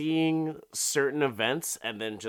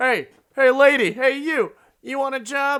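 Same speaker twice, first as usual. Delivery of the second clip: very high, very loud, shrill holler; 10 dB louder than usual. Retelling a story, a man calls to a passerby: imitating a man yelling. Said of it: "he's just yelling to Kathy".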